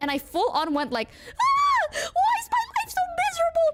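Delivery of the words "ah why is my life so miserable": very high, fast wailing. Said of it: "the highest pitched voice".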